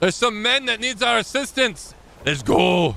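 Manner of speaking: put-on Scottish accent. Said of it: "I don't know why I went like Scottish".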